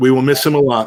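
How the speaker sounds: usual speaking voice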